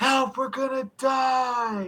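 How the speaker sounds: amplified-sounding, very loud, very high-pitched shout. A character casts Thaumaturgy to make the voice really loud: magically loud shout. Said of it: "make my voice really loud and go".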